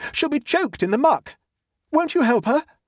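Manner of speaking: breathless, gasped, very high, desperate begging. Narrator reads Octavian calling up to the three children, gasping. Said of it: "gasped Octavian".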